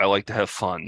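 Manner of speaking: acted flat, joyless, unenthused monotone. Mimicking people who say they like fun, imitating a flat, unenthused tone. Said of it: "they're saying it in a not fun way".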